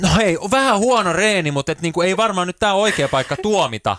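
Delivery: put-on, slightly snappish, mild snap. Retelling the reply to a man who stopped the speaker at the door, retelling a mild snap. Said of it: "kuin vähän tiuskasi hänelle".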